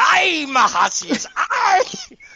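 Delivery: very high, very slow put-on pirate cry. Retelling getting angry during a debate and switching into a pirate voice. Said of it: "transforming my voice into a pirate".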